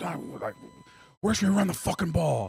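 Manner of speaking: put-on shrill, high, swooping old-school coach scream. Retelling the old-school coach's words at the goal line: imitating coach screaming. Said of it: "Was screaming at us".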